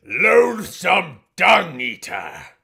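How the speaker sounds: put-on very loud, high, creaky, crackly old man voice. Repeating the other speaker's phrase back to him, imitating an old man voice. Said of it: "You said a loathsome dung eater in that voice".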